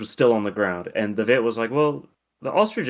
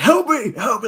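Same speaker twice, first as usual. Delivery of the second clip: mock, very high, loud, gasping, panting yell; 13 semitones higher, 5 dB louder than usual. Recounting a stranger knocking at the front door: retelling a yell for help. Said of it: "he's like yelling though".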